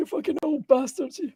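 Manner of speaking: put-on very high, squeaky old man voice. Quoting a guy who cursed at people, in his old man voice. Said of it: "In his old man voice".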